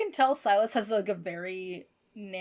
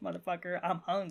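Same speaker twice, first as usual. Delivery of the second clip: put-on scary, menacing voice, quieter; 5 dB quieter than usual. Retelling the gas station scene, quoting Silas: imitating Silas being scary. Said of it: "it's so scary".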